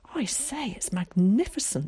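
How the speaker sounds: gasping. Narrator reading a character's line as light shines from a hatch, gasping. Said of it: "gasped Zack".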